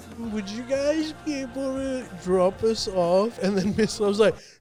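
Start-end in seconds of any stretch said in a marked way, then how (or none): 0.2-3.4 put-on little flirting tone. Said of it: "in a little flirty voice".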